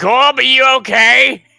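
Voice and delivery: high, drawn-out, carrying scream. Calling down to a fallen party member: screaming down a passage. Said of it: "And I scream down".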